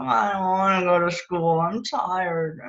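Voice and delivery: mock sleepy, grumbly, tired voice. Retelling what she said lying in bed about school: imitating a grumbly, tired voice. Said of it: "in sort of a grumbly, tired sounding voice".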